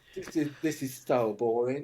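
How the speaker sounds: thoroughly fed up, bored voice. Retelling her reaction to a film shoot, imitating her voice. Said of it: "I don't know why I'm doing that voice for her".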